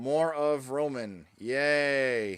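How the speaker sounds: very loud, sarcastic, fake cheerfulness. Co-hosts reacting to news about a unified title, sarcastic. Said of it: "We're not sounding sarcastic at all".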